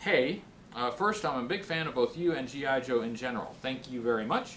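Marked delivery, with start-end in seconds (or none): none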